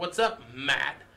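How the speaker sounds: acted-out, very condescending, mocking, talking-down tone. Retelling a bar confrontation, imitating a condescending tone. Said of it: "saying it real condescending to him".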